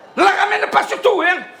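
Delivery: put-on high, shrill, drunken yelling shout.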